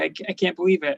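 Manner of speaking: put-on very angry voice. Retelling an episode where Jack is mad at the gangsters: imitating Jack being super mad. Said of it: "he's super mad at them".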